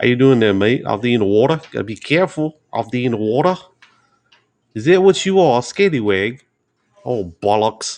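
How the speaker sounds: bad, all-over-the-place mix of British accents. Showing off your accent impressions, admittedly terrible, collection of bad accents. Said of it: "this is my collection of accents".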